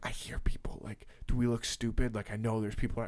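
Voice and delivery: quiet, self-conscious whisper under the breath. Retelling own words to a guide in a busy store, imitating own whisper. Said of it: "whispering to her 'cause I probably look like a fool".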